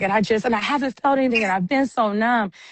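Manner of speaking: fast, high, rushed outpouring. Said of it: "It was like she was vomiting".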